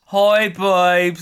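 spoken aloud with Australian vowels. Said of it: "It sounds more Aussie the way he says it".

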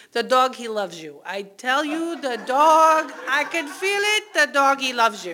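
put-on thick Czech accent. Retelling what the car repair person said about the dog, in a heavy czech accent. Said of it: "they have a very heavy Czech accent".

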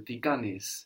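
ordinary talk

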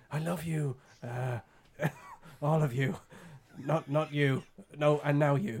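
very slow, drawn-out delivery, each word savoured. Doing an impression of Littlefinger from Game of Thrones: Littlefinger impression. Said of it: "And then later series he just goes".

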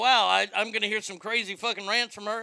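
ordinary talk

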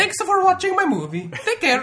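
very high, very loud, swooping cartoon voice. Joking about how he would talk at the end of his movie, do a Mario impression. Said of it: "I can do a good Mario impression".

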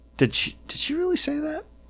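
very high-pitched, stunned, incredulous disbelief. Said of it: "people on the left, like, go".

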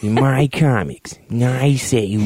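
put-on possessive tone.

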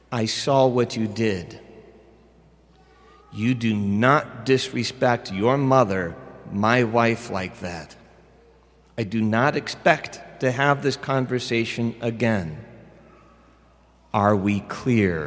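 put-on steady, calm, grave, deadly serious tone. Retelling a father's warning to his son: imitating a calm but very serious voice. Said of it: "in a very calm voice, but one that I knew was very serious".

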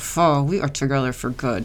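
forced, grudging tone through clenched teeth. Showing how they sometimes say it, grudging, through gritted teeth. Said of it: "sometimes I say it with gritted teeth".

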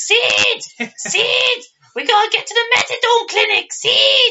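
put-on very high, loud New York accent, words stretched out. Praising the actress playing Nancy in a film: Nancy's New York accent. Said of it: "That's your New York accent".

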